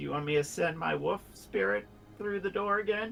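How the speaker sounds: hushed, half-whispered stage whisper, acted. Voicing a character who offers to send a wolf spirit: half-whispering in character. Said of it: "I whisper".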